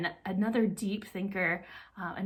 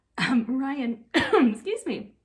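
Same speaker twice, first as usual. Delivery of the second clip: choked-up, voice catching, very slow; 6 semitones higher, 8 dB louder than usual. Introducing today's eight-year inductee, the speaker is getting all choked up. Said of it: "I'm getting all choked up".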